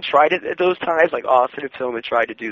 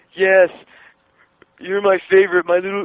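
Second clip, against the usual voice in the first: slurred, high, mocking mumble; 5 semitones higher than usual. Retelling how a man made fun of a deaf family member, retelling a mocking mumble. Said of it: "he mumbled like he was doing".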